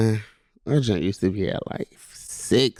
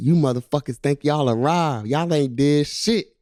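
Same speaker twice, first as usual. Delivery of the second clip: angry, snapping tirade, pitched up; 5 semitones higher than usual. Retelling how a coach snapped at everybody after a loss: imitating Coach Bobo snapping. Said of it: "he was snapping on everybody".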